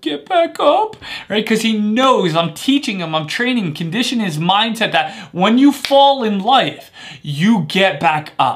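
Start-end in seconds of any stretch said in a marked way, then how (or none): 0.0-1.0 put-on very high, cute, childish whine. Quoting his answer after asking what we do when we fall, imitating cute whiny voice. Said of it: "in his little cute whiny voice".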